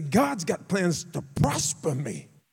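play-acted, slow, emphatic, high, sing-song declamation. Reenacting declaring a promise aloud in the kitchen: reenacting own past yelling. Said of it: "I would yell it".

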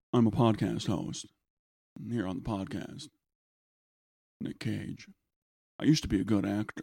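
low, crackly voice, pitch dropped way down. Doing the next podcast in an actor impression: Nicolas Cage voice. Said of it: "like Nicolas Cage".

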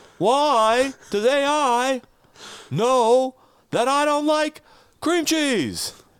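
drawn-out, stretched, high, loud delivery. Doing a stand-up bit about A I when asked: Jerry Seinfeld impression. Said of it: "Do a Jerry Seinfeld bit".

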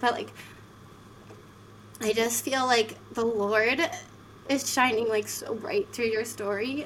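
emotional, moved voice. Responding to someone who just shared their story, getting emotional. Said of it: "I'm getting emotional about this".

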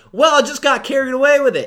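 loud, high-pitched twang. Retelling how an over-the-top actor explains his motive: imitating Bill's weird twang. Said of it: "pretty much how he says it".

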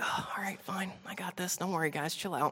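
easy, unbothered calm. Retelling the storm story as Jesus is woken: calm Jesus voice. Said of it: "I love Jesus just so calm".

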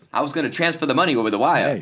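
forties radio announcer voice. Speaker riffing on old slang for money, in a 1940s radio voice. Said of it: "Back in the nineteen forties radio voice".

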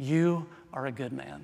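hushed, slow, soft half-whisper. Retelling what one man half-whispered to another on camera: imitating someone half-whispering. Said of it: "he whispers to him".

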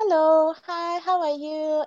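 high-pitched Malaysian English accent. Describing how people from Malaysia speak English, in a soft Malaysian English accent. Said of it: "It's more like soft and sounds like Indian English".

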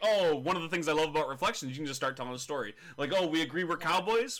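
normal talking voice

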